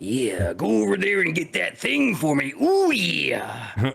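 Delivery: drawn-out macho tough-guy voice. Speaker voices the little guy's inner thoughts, in a Macho Man voice. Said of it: "I can do a decent Macho Man voice".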